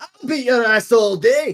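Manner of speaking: put-on tipsy high-pitched dwarf voice. Voicing a dwarf who stumbles out of a building: drunken dwarf voice. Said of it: "dwarves drunkenly stumble out".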